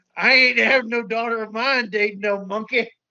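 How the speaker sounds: put-on Southern fatherly accent. Joking about a sequel plot, the speaker voices Godzilla with a southern accent. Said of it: "and a southern accent".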